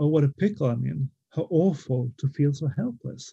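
ordinary delivery

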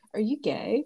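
mock earnest, no-joke, dead-serious tone. Retelling a question asked over drinks: imitating a serious question. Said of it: "serious face".

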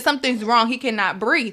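ordinary talk, nothing marked

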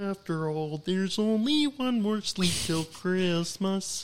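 slow, high-pitched froggy character voice. Giving the others a glimpse of a recorded track: Kermit voice. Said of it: "in my Kermit voice from the Muppets Christmas Carol".

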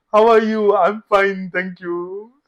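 mock Japanese accent in English. Friends recalling greetings they remember; speaker imitating Japanese-accented English. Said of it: "it was this Japanese one".

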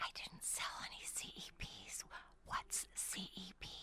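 hushed whisper. Retelling her own reply after being named top seller, whispering. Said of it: "And I whispered".

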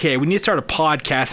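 ordinary talk, nothing marked

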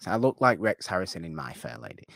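ordinary delivery

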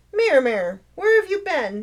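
chiding, scolding tone with swooping pitch. The speaker addresses the cat as it comes in, chastising. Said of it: "Marion chastised".

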